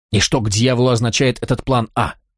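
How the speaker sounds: ordinary delivery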